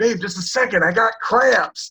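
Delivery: loud yell. Retelling a movie line moment with a cramp: imitating himself yelling. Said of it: "you yelled it".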